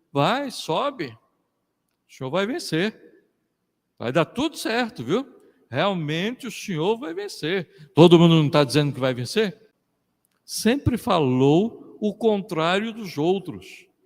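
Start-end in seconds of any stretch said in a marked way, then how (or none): 0.1-7.9 sarcastic mock-reassuring tone, swooping sing-song irony. Speaker acting out a reply from a Bible passage, retelling in an ironic tone. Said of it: "era como se fosse um tom irônico".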